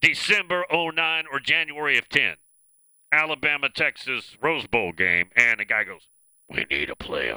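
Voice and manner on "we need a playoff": deep, scraggly, ragged voice, much lower. Speaker imitates a guy at the Rose Bowl game, deep scraggly voice. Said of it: "It's like a deep voice, scraggly voice".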